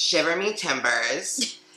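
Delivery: put-on leprechaun voice, high and sing-song. Closing a Saint Patrick's Day cocktail intro: attempted leprechaun voice. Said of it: "I'm trying to speak like a leprechaun".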